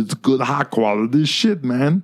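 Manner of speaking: Venezuelan accent with Italian touches. Demonstrating the character voice you do, a put-on Venezuelan-Italian accent. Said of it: "I literally try to sound like".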